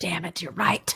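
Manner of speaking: hushed, resigned, defeated whisper.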